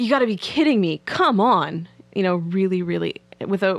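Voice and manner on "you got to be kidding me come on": mock, emphatic raised voice, swooping with disappointment. Retelling a man's reaction a few seconds into a phone call, retelling a raised voice. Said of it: "he raises his voice and he says".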